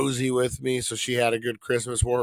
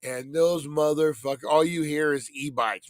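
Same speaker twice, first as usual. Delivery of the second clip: ordinary talk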